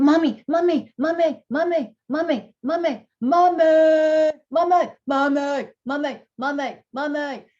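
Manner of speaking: put-on high, loud, drawn-out nagging toddler voice. Describing toddlers interrupting their parents' adult conversation, the speaker is imitating a toddler. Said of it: "You ever see toddlers, really young children".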